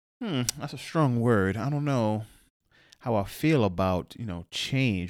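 ordinary talk

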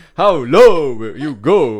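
booming, very loud, drawn-out delivery. Trying the line one more time after being pushed to retry it, very loud. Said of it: "don't destroy your mic".

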